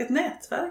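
nätverk stressed, lifted high with a rise. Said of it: "betoning på nätverk".

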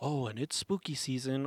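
ordinary talk, nothing marked

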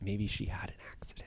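hushed near-whisper. Discussing a skydiving scene in a movie, in a lowered voice. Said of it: "I'll lower my voice for this".

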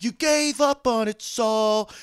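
very loud, very high, slow drawn-out yell. Complaining about a scene, the speaker mimics a character yelling at another: retelling a shout. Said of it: "And he's just shouting".

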